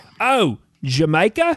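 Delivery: put-on Cockney accent. Retelling a joke about a man whose wife went to the Caribbean; Cockney accent. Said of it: "So in a Cockney accent, he says".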